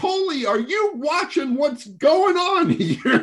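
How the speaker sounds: acted, shrill, furious shout at very high pitch. Retelling a phone call during a pregame scuffle: imitating Glenn Sather yelling. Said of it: "he starts yelling".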